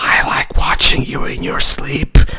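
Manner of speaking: close, soft, breathy whisper, all breath. Quoting what the character says while going up to him: imitating a character whispering. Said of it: "goes up to him and literally whispers".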